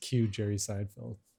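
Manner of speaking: normal talking voice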